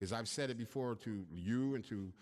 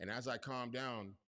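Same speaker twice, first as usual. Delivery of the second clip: normal talking voice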